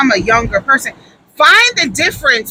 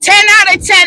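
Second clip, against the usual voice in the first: high, loud, hyped-up shouting. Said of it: "emphatic shout of catchphrase".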